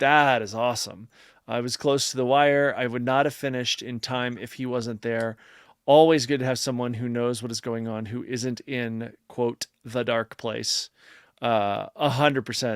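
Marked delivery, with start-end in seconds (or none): none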